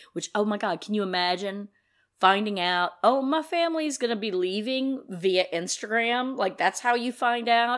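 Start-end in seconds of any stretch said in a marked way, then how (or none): none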